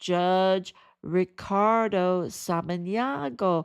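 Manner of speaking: slow, deliberate, each word carefully drawn out. Making a reservation, the speaker repeats the judge's full name, saying it slowly. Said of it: "let me say it slowly".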